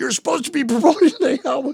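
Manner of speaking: high, loud scream. Retelling how a record label rep came in: imitating someone screaming. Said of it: "comes in screaming at me like".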